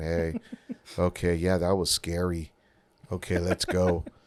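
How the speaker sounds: low, flat, emotionless, wooden monotone. Mocking an actor who didn't study his lines, all monotone. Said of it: "he's just like all monotone".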